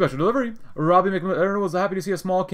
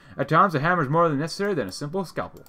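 usual speaking voice

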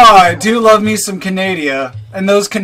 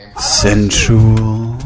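seductive put-on villain voice, lower; 10 semitones lower than usual. Greeting the others while playing: super seductive Darth Vader voice. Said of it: "I was trying to do a super seductive Darth Vader".

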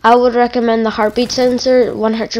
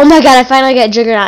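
mock freaked-out, loud, rushed, excited outburst; 6 dB louder than usual. Retelling getting juggernaut for the first time: imitating own freaked-out excitement. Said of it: "I was freaking out so much. I was just like".

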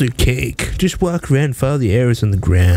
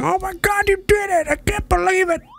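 mock pitying, praising tone. Retelling how the game reacted after a close-enough result: imitating the pitying game. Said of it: "The game had pity on me. He's like".

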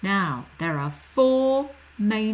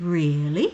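"really" with pitch lifting up at the end; 3 semitones lower than usual. Teaching a rising tone like an English question; rising question pitch on 'Really'. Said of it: "It goes up, a bit like when we're asking a question in English. We go up".

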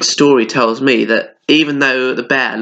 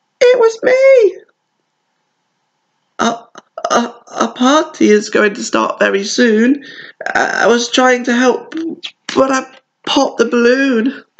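tiny, trembling, very high-pitched voice; 11 semitones higher than usual. A hare answering an angry bear, in a small, shaky voice. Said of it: "Hare said in a small, shaky voice".

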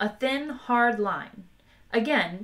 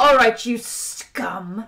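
menacing, growled, loud and slow; 2 semitones higher, 7 dB louder than usual. Narrator reads a character advancing on two men with a gun; growled. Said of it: "he growled".

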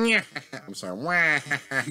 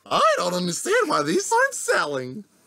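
overjoyed, cheerful voice, high and swooping; 8 semitones higher, 4 dB louder than usual. Voicing a seller whose goods aren't selling, in a really happy voice. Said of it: "give him a really happy voice".

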